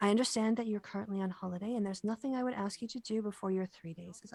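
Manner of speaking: hushed voice. Narrator voicing a woman who leans in to speak to a model, lowered voice. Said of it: "She also lowers her voice and says".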